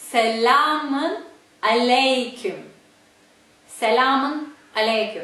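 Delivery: very slow, deliberate, each syllable carefully drawn out. Explaining a greeting's pronunciation to listeners, said slowly. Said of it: "let's say it slowly".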